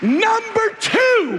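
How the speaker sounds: very high, shouted-out yell. Moving to the second point of a talk on Ephesians, yelling. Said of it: "I don't know why I'm yelling that".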